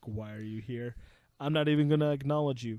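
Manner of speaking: flat, unbothered, deadpan brush-off. Retelling an anime scene, quoting a cold character: imitating a deadpan Chinatsu. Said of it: "Chinatsu's, like, deadpan".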